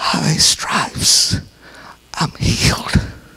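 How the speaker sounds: mock frail little voice. Retelling how a woman with cancer answered the devil, imitating a little weak voice. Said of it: "she would say with her little weak-bodied voice".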